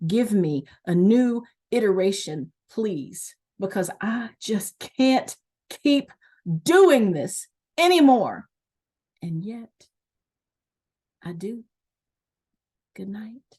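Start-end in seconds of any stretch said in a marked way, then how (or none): 0.0-8.5 intense, charged performance-poetry spoken-word delivery. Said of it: "the same kind of intensity and delivery".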